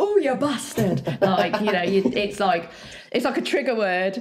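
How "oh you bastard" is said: northern English accent, much higher pitch. Showing the trigger word used to practise an accent, in a northern English accent. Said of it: "like a northern style accent".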